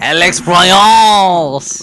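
put-on French-accented, name drawn out. Saying the director's name the way he talks: French-accented Alex Proyas impression. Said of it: "I just know that's how he talks".

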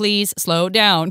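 mock robotic automated-sounding voice. Complaining about customer service calls, imitating a robotic automated voice. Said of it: "than like a robot that's like".

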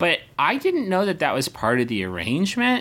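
very high, slow, bewildered character voice. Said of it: "my leg muscles would be like".

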